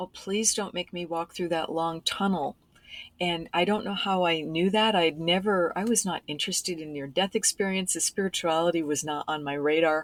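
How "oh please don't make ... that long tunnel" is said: mock desperate pleading voice. Retelling crying out for help while stalled before a tunnel: retelling a desperate plea for help. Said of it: "just crying out for help and saying".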